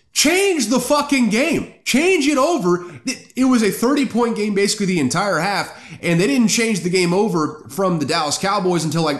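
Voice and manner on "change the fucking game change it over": put-on high, pitched-up screaming. Retelling yelling at the TV to change the game: imitating screaming at the TV. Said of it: "I was screaming at my T V".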